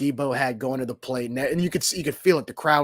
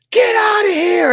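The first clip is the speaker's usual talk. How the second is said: shrieking yell, very high and very loud; 12 dB louder than usual. Retelling watching a home run from the doors: retelling own scream. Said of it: "I'm just screaming".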